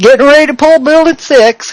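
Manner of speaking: put-on American Southern accent. Retelling what a man in a video says: imitating a southern accent. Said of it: "in a southern accent".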